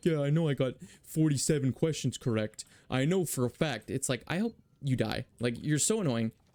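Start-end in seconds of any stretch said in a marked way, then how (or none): 0.1-3.9 self-satisfied, smug, show-off boasting tone. Imitating test-takers who brag about their grades: imitating a smug show-off. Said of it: "'Cause you sound like a prick".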